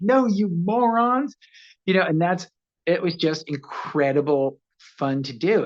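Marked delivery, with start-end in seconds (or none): 0.0-1.4 mock high, frustrated scream of exasperation. Recalling his favorite scene, trapped in an ambulance on the radio, retelling a scream. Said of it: "I'm screaming at them. I'm like".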